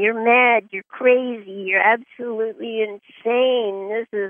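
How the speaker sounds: plain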